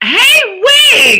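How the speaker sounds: loud, thrilled, high-pitched excited squeal. Greeting a viewer who just joined the live: excited greeting. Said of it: "I shouldn't sound so excited".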